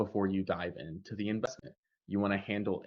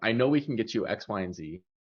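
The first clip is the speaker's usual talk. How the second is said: loud, certain, confident, unwavering delivery; 7 dB louder than usual. Demonstrating how to present promised results: loud, certain, confident delivery. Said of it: "You have volume, you have the tonality, you have certainty".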